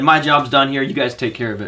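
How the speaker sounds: ordinary talk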